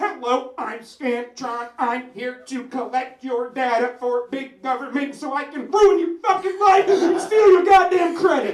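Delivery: put-on mechanical robot voice. Joking that the name sounds like a robot, speaking as it: Scantron robot voice. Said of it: "Sounds like a robot".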